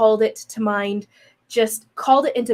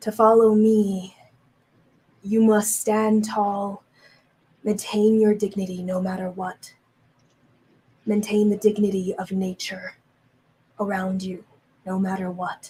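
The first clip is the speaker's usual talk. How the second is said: almost a whisper. Retelling what it said, speaking into your mind, almost a whisper. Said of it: "almost a whisper".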